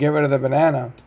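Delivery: mock ship captain voice, urgent, screaming. Retelling a captain yelling through a megaphone: retelling the captain screaming. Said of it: "was screaming".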